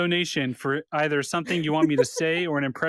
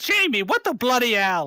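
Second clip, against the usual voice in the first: high, swooping put-on heroine character voice; 7 semitones higher, 3 dB louder than usual. Doing one impression after another on a podcast, now speak to Jamie in a Xena impression. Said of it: "here's Xena".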